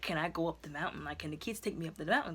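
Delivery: plain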